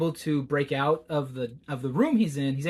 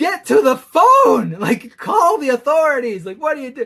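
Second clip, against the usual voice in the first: shrill, very high, very loud screaming; 10 semitones higher, 11 dB louder than usual. A reader describes a tense book, retelling screaming at the book. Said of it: "I'm just screaming at the book like".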